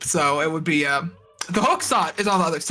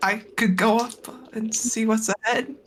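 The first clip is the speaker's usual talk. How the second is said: meek, timid voice; 4 semitones higher than usual. Speaker voicing a character to the group: meekly.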